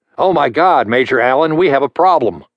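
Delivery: quickened, high, overly excited tone. A captain speaks into his headset to a major: quick, overly excited tone. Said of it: "he said in a quickened and overly excited tone".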